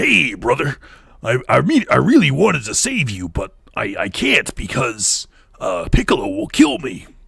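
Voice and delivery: raspy, gravelly, gravel-edged voice. Speaker imitates a game character's line, gravelly voice. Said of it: "I can do a gravelly voice too".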